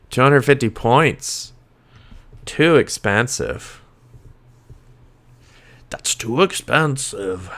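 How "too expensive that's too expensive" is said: slow, drawn-out cartoon character voice. Talking about building a team, the speaker does a Beauty and the Beast impression. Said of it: "That's my Beauty and the Beast impression".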